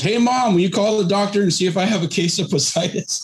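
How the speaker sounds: put-on high-pitched yell, calling out. Retelling how a fifteen-year-old called out to his mom: imitating a yell. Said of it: "So he literally yells".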